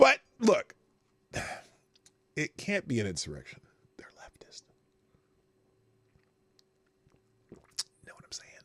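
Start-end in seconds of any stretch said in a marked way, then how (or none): 4.0-8.5 breathy whispered aside, all breath. Commenting on new videos during a live stream: whispering. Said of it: "I'm whispering for no reason".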